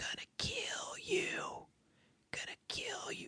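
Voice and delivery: menacing, threatening whisper, barely voiced. Speaker acting out a man's message on a woman's answering machine, retelling a whisper. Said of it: "whispering and he's going".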